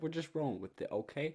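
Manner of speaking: put-on New Jersey accent. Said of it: "I'm doing a Jersey accent".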